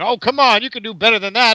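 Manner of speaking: loud, high, hyped, belting ring announcer voice. Imitating a ring announcer hyping up the crowd: pandering Jeremy Borash impression. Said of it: "parody of an old-timey radio announcer".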